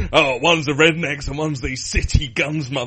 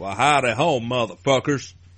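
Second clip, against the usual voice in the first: put-on American-style accent; 2 semitones lower than usual. Asked to try a show intro in an American-style accent. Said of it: "go for an American style accent".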